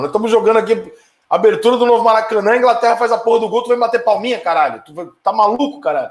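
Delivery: high, loud, hot angry rant.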